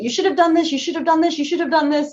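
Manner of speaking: put-on nonstop barking. Retelling a pediatrician listing what should have been done: imitating a doctor barking orders. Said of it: "he just starts barking information at me".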